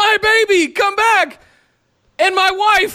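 high, far-off, mock yell. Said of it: "Drake yells".

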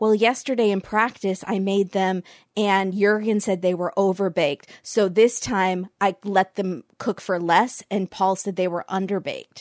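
plain

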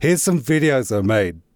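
put-on passive-aggressive tone. Quoting the short email they sent a new york office, in a mock passive-aggressive tone. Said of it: "in a passive-aggressive tone".

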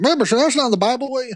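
put-on Southern US accent. Voicing Christians skeptical of church membership, in a Southern American accent. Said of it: "I just gave you a Southern American accent".

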